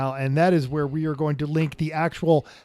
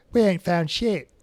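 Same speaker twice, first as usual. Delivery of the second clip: terrible put-on Australian accent; 2 semitones higher, 4 dB quieter than usual. Retelling a funny bit that a woman with a giant helmet did, use Rachel's terrible Australian accent. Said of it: "in her um, Australian accent".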